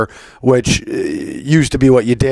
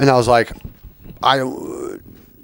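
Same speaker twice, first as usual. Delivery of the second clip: ordinary talk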